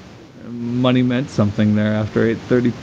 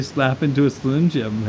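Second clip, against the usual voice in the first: ordinary delivery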